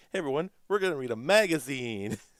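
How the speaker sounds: high, loud, mock enthusiastic host voice. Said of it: "enthusiastic, like".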